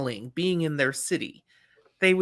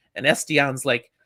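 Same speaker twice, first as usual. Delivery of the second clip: ordinary talk, nothing marked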